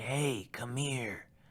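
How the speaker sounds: low, raspy, hushed murmur. Retelling a voice calling to him from a bush: low, raspy voice. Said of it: "in like a low, raspy voice".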